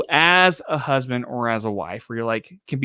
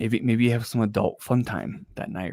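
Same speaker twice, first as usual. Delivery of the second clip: mock seductive, sensual voice, quieter; 7 dB quieter than usual. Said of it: "my sensual voice".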